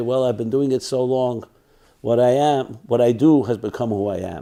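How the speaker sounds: normal talking voice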